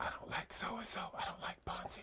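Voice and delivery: hushed, quiet whisper.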